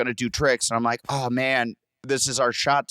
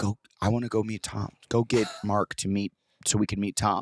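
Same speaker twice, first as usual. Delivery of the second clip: put-on hushed whisper; 3 semitones lower, 4 dB quieter than usual. Speaker retells someone backstage urging him to go meet Tom, whispering. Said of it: "she kept like whispering to me".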